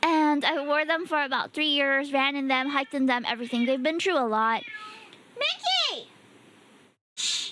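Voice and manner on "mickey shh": shrill, very high shout. Interrupting a story to hush the cat, yelling at the cat. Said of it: "I should be the only one yelling".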